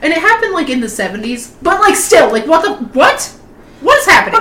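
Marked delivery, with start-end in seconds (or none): 1.6-4.4 high, furious, outraged rant with angry disbelief. Reacting to a story about parents and a kidnapping, so angry. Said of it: "I'm so angry right now".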